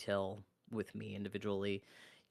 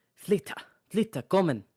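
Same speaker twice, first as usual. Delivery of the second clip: urgent shout, very high and very loud; 10 semitones higher, 13 dB louder than usual. Voicing a stranger's voice calling the players to come: Gosha's voice calling urgently. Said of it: "you both hear an unfamiliar voice".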